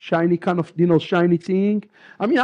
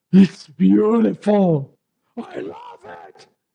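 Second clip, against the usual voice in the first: mock breathless gasping awe, very drawn out, slow, swooping. Retelling first seeing a costume as a boy: imitating a gasping child. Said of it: "I'm gasping".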